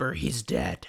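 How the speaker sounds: rough, gruff, very low whisper. Retelling a book scene where a disguised character speaks: gruff whisper. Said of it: "says in a gruff whisper".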